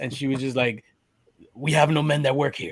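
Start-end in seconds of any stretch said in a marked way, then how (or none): 1.5-2.7 put-on rough, rugged tone of voice. Retelling a woman answering a man picking up a cake, imitating a rough voice. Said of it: "a rough voice".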